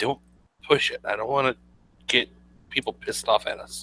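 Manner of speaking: quiet, hushed murmured aside. Leaning in between both companions at the table: saying quietly in character. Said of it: "say quietly".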